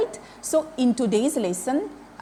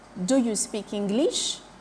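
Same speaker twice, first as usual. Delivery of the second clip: plain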